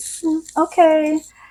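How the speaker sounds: put-on passive-aggressive tone. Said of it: "very passive-aggressive tone to her voice".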